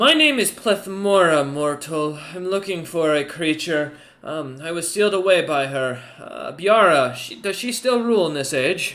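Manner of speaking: loud creature voice. Voicing a creature speaking through Nar's body to a player: Plethmora creature voice. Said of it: "the creature begins to speak through Nar's voice and goes".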